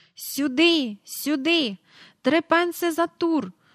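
distant call, high pitched and drawn out. A narrator reads a park attendant summoning riders to a carousel, calling out from afar. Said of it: "гукав десь віддалік парковий доглядач".

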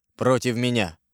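ordinary delivery

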